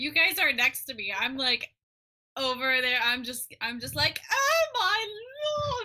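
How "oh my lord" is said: put-on weird, higher old lady witch voice. Voicing a character in a game, hysterical on a boat: weird old lady witch voice. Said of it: "whatever weird old lady witch voice I decide to settle on".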